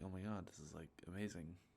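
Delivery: ordinary delivery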